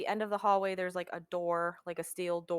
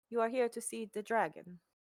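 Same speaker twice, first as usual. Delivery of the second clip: put-on Italian accent on English; 4 semitones higher than usual. Retelling what a kneeling woman said without looking up, put-on Italian accent. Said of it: "pardon my Italian accent because it comes from Mario".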